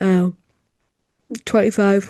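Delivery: talking through a yawn. Recapping a twenty-five minute match, breaking off mid-sentence, yawning. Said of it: "I'm just yawning".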